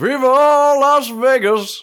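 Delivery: very high, very loud cry with drawn-out "las". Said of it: "give us your best Viva Las Vegas [name] impersonation".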